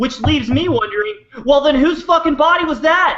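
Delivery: full-on yelling. Ranting about whose body it was: yelling. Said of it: "I'm yelling too loud for Ron".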